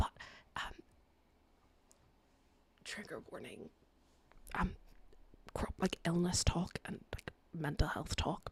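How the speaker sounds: hushed whisper under the breath, barely audible. Speaker must whisper because mum is downstairs; whispering. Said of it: "I have to whisper because my mum is like literally downstairs".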